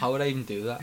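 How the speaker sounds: ordinary delivery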